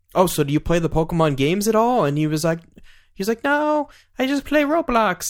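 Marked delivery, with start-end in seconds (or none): 3.5-5.3 put-on very high, slow little-kid voice. Retelling a kid's answer about which games he plays: kid impression. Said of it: "That's my impression of this kid".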